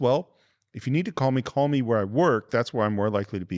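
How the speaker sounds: ordinary talk, nothing marked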